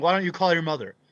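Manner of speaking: sobbing, tearful, crying, pleading voice. Retelling how a lady in class started crying and said. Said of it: "She starts crying".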